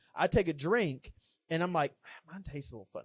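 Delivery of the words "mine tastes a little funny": soft, quiet murmur. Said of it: "I just thought in my head".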